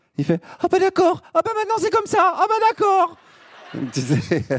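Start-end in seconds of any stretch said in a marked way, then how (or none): 0.6-3.2 annoyed, fussy falsetto, very high pitch. Imitating Pascal Praud when he is annoyed: Pascal Praud, annoyed falsetto. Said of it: "il fait une petite voix de tête".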